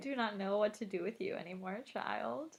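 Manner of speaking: sarcastic, very softly spoken. Saying a quoted line after being asked to say it sarcastically: sarcastic. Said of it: "You could say it sarcastically".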